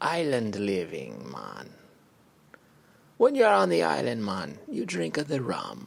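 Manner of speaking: loud, booming, swooping sing-song put-on Caribbean accent. Joking about a refreshing drink, in a Caribbean accent. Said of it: "Caribbean accent there".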